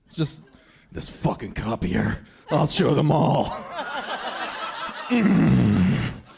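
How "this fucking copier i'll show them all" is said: put-on low, slow, grumbling voice. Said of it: "How about I do an impression of, uh, of Ernest".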